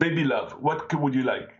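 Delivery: Nigerian accent done as a put-on. Imitating how Nigerians might address a girlfriend: imitating a Nigerian accent. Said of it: "I'm doing the accent".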